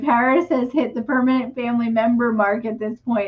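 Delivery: ordinary talk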